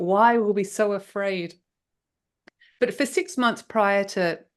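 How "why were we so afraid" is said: plain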